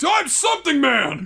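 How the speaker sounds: mock, high, slow announcing shout.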